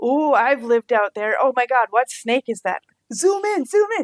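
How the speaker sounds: mock overeager, hopeful gushing, rising pitch. Retelling sitting there watching a snake on screen, acting way too excited and hopeful. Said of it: "way too excited and hopeful".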